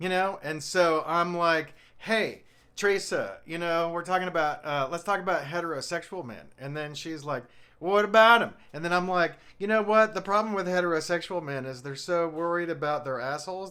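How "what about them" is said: loud put-on Southern American accent. Retelling a conversation with Teresa, Teresa's Southern American accent. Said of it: "she has a southern accent. So when I do impression of her, it's gonna sound like this".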